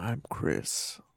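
alluring, breathy, seductive whisper. A podcast co-host introducing themselves, seductive voice. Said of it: "I'm being seductive".

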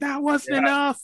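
put-on very high, full-throated scream. Recalling a childhood memory of a man screaming to God, imitating a man screaming. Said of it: "he's screaming like".

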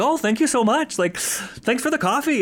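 play-acted, sunny, very high, cheerful voice. Retelling how the detective thanks the officer for coffee: imitating someone happy. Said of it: "she's all, like, happy about it".

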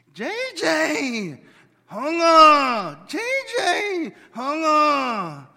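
put-on drawn-out, very high, very loud squabbling kids. Retelling what is heard at home when the children bicker: imitating kids bickering. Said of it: "let me get the tone right".

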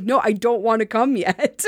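normal talking voice

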